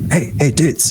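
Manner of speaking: voiced, audible stage whisper. A character calls both players over to him, half-whispering. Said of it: "Like he whispers".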